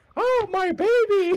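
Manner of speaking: very high-pitched put-on fake woman's voice. A player's character walking out and pointing at someone, in a woman's voice. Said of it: "in Akhenaten's best like woman or yeah that voice".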